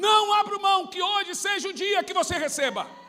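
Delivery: fervent, loud, high, preaching-style shout.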